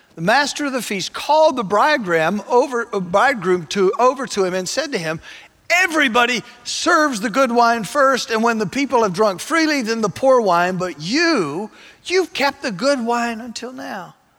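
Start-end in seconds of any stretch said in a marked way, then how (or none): 5.7-14.1 voice full of joy, delighted exclaiming. Reading the feast master's words to the bridegroom, joyful. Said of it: "You can hear the joy in his voice".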